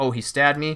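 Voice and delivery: ordinary talk, nothing marked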